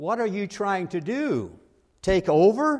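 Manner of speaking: threatening bark. Retelling a lady standing toe-to-toe with the speaker, retelling a threatening bark. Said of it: "barked at me in a threatening tone".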